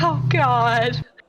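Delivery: beaten, defeated, resigned, given-up tone. Voicing a character stuck in a talking bath: defeated. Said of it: "he sounds so defeated".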